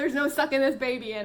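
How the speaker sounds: words spoken through laughter, giggly. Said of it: "I'm laughing".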